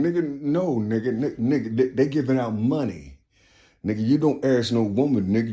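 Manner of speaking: whispering. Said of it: "somebody whispering".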